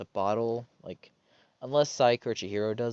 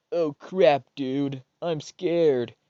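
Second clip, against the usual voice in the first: put-on loud, very slow, drawn-out stoner accent; 4 semitones higher, 7 dB louder than usual. Retelling Hiro's reaction on walking in on a crime scene, stoner accent. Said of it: "my best stoner accent".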